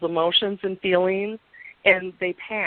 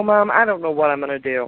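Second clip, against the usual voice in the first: tearful, crying voice; 4 semitones lower, 5 dB louder than usual. Retelling calling the mother about heavy conflict: imitating own past crying. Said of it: "I would call her crying".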